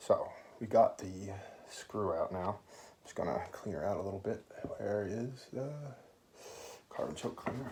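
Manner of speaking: soft, hushed whisper under the breath. Cleaning a part at night while his girlfriend sleeps, whispering. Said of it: "Sorry about whispering".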